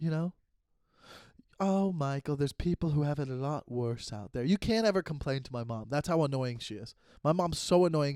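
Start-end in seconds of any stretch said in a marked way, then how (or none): 0.0-4.4 put-on soft-voiced British accent. Speaker imitating his mom, who never lets him complain: soft-voiced British mom impression. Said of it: "she's got a soft voice".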